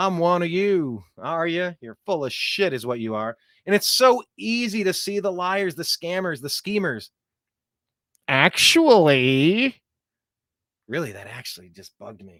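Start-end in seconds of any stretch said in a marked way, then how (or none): 0.0-1.0 slow, fake, put-on Southern drawl. Mocking politicians on whistle stop tours: imitating a put-on Southern accent. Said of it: "suddenly they got a Southern accent".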